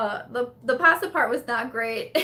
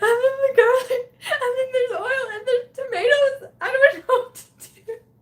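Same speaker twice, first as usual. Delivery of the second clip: play-acted tearful sobbing, very high and loud; 13 semitones higher, 5 dB louder than usual. Retelling what she told a man after a cooking mishap, retelling crying speech. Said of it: "I'm just crying at this point".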